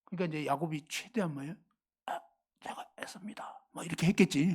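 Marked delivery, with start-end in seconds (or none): 2.0-3.5 whispered, hushed put-on voice. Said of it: "이 성대모사".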